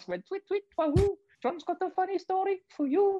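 goofy, silly little bird voice, very high. Retelling what a little birdie that flew past said, silly bird voice. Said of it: "Every time you do a silly voice".

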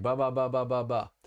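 put-on babbled baby-talk syllables. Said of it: "my first syllables sounded like baby talk".

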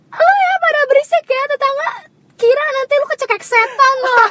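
high, loud scolding rant.

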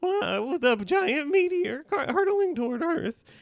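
high, squeaky cat voice.

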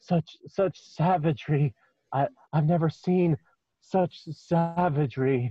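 muttering under his breath. Voicing the hobgoblin in a tabletop game, the narrator mutters under his breath. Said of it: "says under his breath".

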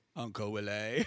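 put-on posh American voice. Imitating how she says a name in the movie: imitating an American posh voice. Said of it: "it's the American posh voice".

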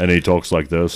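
low, deep, scary put-on voice.

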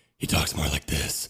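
hushed, breathy whisper, all breath.

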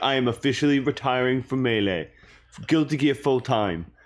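put-on French accent. Imitating a player announcing his retirement, Leffen impression with French accent. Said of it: "doing a French accent on the Leffen impression".

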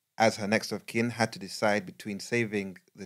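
ordinary delivery

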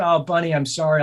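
mock weepy, tearful, sorry-sounding crying voice. Retelling how a partner followed behind crying: imitating someone crying. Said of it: "she's crying".

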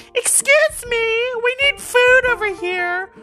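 squeaky put-on voice. Retelling what a lady at Original Joe's said to him; squeaky Karen voice. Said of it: "she says in this really squeaky Karen voice".

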